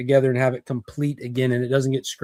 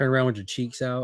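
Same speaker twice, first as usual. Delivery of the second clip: usual speaking voice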